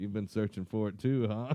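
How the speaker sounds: ordinary talk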